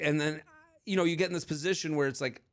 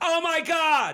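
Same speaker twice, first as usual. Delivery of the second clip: mock very high, piercing, loud shriek; 12 semitones higher, 6 dB louder than usual. Retelling what a woman at a bar screamed, imitating her scream. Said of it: "and she goes".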